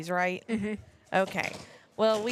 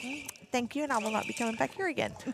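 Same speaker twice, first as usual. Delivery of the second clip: careful, proper speech with country twang scrubbed out; 3 semitones higher, 4 dB quieter than usual. Retelling a reply to a cashier who asked to hear the accent: least country accent she could. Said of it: "She said it with her most uncountry twang she could".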